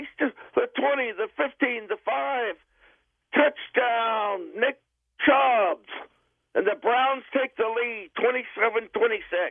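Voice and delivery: sportscaster play-by-play voice. Redoing the sample call with the player's name: play-by-play announcer voice. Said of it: "the new play-by-play voice of the Cleveland Browns".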